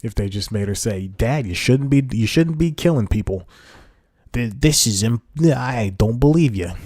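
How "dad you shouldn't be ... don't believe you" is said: put-on Italian accent, higher pitch. Imagining a line a daughter in a movie could have said to her father, put-on Italian accent. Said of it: "so that's my Italian voice".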